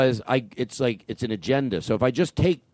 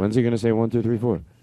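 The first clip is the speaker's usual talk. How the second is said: ordinary delivery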